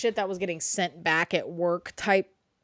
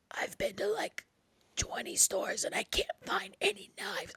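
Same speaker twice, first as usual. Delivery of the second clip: faint, breathy, barely-there zombie whisper; 13 semitones higher, 9 dB quieter than usual. Retelling own vlog while sick, looking for knives: imitating own sick zombie voice. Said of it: "I was giving fucking zombie voice".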